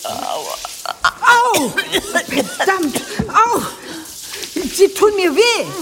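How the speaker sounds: very high, pained screaming and crying out. As Zen claws at the narrator's throat, the narrator screams in pain. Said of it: "Je lauter ich schreie".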